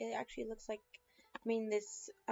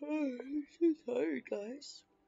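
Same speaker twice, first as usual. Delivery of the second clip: said through a yawn; 4 semitones higher, 3 dB louder than usual. Speaker apologizing to the audience, yawning. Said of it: "Sorry, I'm yawning".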